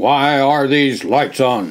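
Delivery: loud, commanding, authoritative voice. A narrator reads the duty officer's demand to the men, in a loud, commanding voice. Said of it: "demanded a loud, commanding voice".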